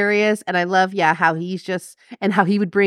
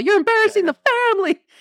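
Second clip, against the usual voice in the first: very high, furious, angry yell. Quoting a yelling father from a movie scene: imitating Phil Hartman yelling. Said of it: "he's all".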